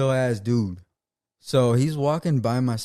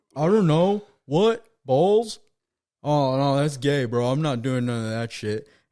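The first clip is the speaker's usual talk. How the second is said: put-on heavily slurred words, slurred hard; 2 semitones higher than usual. Telling a story and quoting the other guy's reply, imitating slurred speech. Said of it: "slurring his words really hard".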